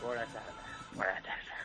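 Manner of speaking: soft, low, sick-sounding voice with a cold.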